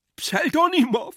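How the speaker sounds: very high-pitched, loud, shrill shout. Stretching his hands out toward the other man, he screams. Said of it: "schrie Iwan Iljitsch".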